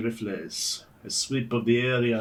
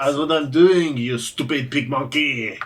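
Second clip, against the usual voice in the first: French accent, put-on, shouted very loud; 4 semitones higher, 8 dB louder than usual. Asked to read the article in a French accent, the speaker answers back, French accent. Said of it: "please do so in French accent".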